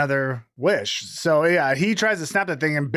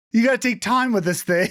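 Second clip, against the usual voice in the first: put-on panicked tone, higher pitch; 7 semitones higher than usual. Retelling a movie scene where a character warns another: imitating someone panicking. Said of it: "Bear's panicking".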